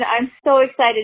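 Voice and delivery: ordinary talk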